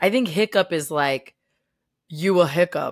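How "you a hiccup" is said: put-on, mocking, taunting schoolyard bully voice. Discussing the name Hiccup with a co-host, in a put-on bully voice. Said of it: "I like your bully voice".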